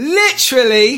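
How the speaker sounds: light British accent, very high and loud. Asked to do it, saying the one word that works in a little British accent. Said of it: "you got that little British accent there".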